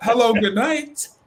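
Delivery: put-on West Indian accent. Retelling his reply to someone on TikTok who annoyed him, put-on West Indian accent. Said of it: "let me put my West Indian voice on here".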